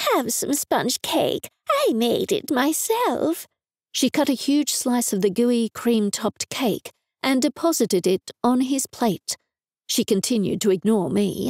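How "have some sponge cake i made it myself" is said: gushing, doting, high sing-song cooing. Mum, ignoring the narrator, gushes over a man at the table: cooing. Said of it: "she cooed".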